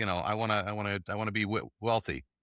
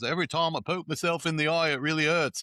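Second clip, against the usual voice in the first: Cockney accent, pitched up; 7 semitones higher, 3 dB louder than usual. Quoting a favorite saying about poking the eye, Cockney accent. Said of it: "it's done with kind of a Cockney accent".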